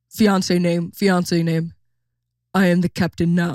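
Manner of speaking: huge, giant big man's way of talking. Retelling a reality show scene, imitating a huge guy's voice. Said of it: "His voice is like this".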